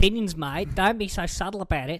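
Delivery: very loud, bad, fake Australian accent. Speaker answering a remark about their accent, in a terrible australian accent. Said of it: "terrible Australian accent".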